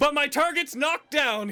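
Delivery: loud, very high-pitched yelling. Voicing a crossbow-firing character in combat: yelling. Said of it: "he yells".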